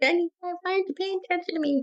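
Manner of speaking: put-on, very high, whimpering whine. Retelling how he whimpered for attention, imitating a whimper. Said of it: "He was whimpering at me".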